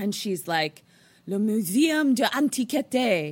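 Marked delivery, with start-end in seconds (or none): 1.3-3.3 slow, not-great put-on French accent. Telling a story, a woman answers the taxi driver: put-on french accent. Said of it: "Wasn't my best French accent".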